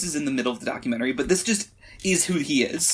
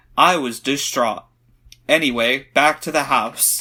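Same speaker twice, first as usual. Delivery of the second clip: put-on flat monotone voice, lower and louder; 4 semitones lower, 5 dB louder than usual. Retelling how the documentary's narrator mentions a friend's death: imitating Zak Bagans' flat monotone. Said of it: "same tone, same tone, just goes".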